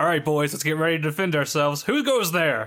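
loud yelling, calling out. Voicing a character hearing footsteps in the darkness: yelling out. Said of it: "he yells out".

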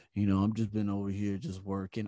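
very low, flat, dead-level monotone drone. Speaker mimics a man whose voice notes he can't stand, imitating a monotone voice. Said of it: "It's just monotone".

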